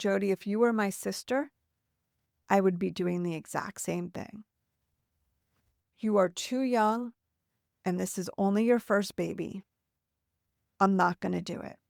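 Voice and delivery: ordinary talk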